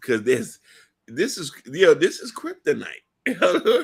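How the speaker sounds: choked-up, swooping voice catching with emotion. Mid-conversation with another speaker, admitting to choking up. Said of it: "I'm choking up".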